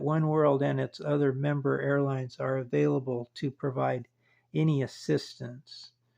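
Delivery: ordinary delivery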